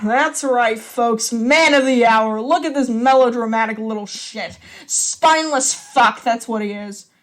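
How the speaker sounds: loud, angry drawling voice. Mikhail speaks to the folks about his older brother, slow, angry drawl. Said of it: "His older brother removes the cigarette and exhales smoke thoughtfully, / Mikkel growls under his breath, / His older brother removes the cigarette and exhales smoke thoughtfully, / voice deep and sar".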